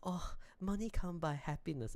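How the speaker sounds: imitated crying, rich-person voice. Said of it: "in their jacuzzi, crying".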